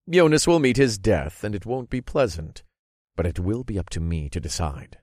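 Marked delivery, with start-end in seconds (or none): none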